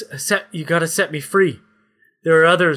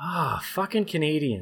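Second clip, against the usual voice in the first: weary, annoyed, exasperated and fed-up cursing; 10 dB quieter than usual. Voicing Henry Cavill's reaction to the players: Henry Cavill exasperated. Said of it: "Henry's just got this look on his face like".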